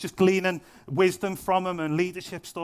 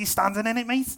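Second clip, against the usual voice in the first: put-on Scouse accent, pitched up; 5 semitones higher than usual. Retelling a friend's reply to a challenge about faith: Scouse accent. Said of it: "he said it like that as well, because he was Scouse".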